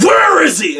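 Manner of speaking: enraged.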